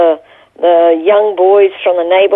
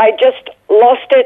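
usual speaking voice

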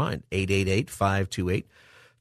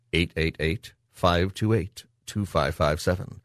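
slow, deliberate, each digit spaced out carefully; 3 semitones lower than usual. Speaker repeating the call-in phone number for listeners, saying it slowly. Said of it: "I'm trying to say it slow".

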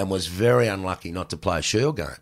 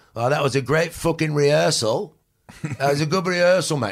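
put-on English accent, higher pitch; 7 semitones higher than usual. Retelling what the English producer said after pieces to camera: imitating Adrian Brandt. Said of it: "this Pommy guy was working for them".

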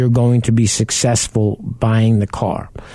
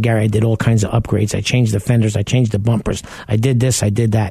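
normal talking voice

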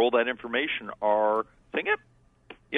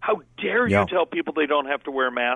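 put-on angry yelling; 3 semitones higher than usual. Retelling people yelling at the CDC: imitating people yelling. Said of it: "Now they're yelling at the C D C saying".

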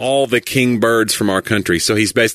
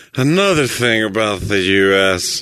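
put-on drunk, tipsy-sounding English accent. You act out how a lecturer sounds after drinking, in a put-on drunk English accent. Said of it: "He didn't have an English accent when he when he drank".

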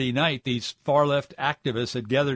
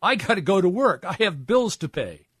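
put-on pleading voice, higher; 6 semitones higher than usual. Retelling a driver's words to people blocking the road: imitating someone pleading. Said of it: "he was pleading with them".

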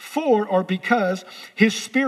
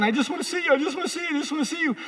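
acted, rushed, repeated, pitched-up pleading; 6 semitones higher, 4 dB quieter than usual. A speaker tells a crowd how Moses begged God, acting out Moses begging. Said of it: "Moses was begging".

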